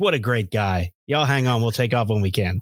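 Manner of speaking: imitated sarcastic, annoyed, snarky announcer voice. Retelling the pilot announcing the crew chief arrived: imitating a sarcastic, annoyed pilot. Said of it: "That pilot was pissed".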